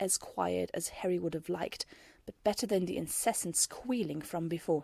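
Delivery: plain reading voice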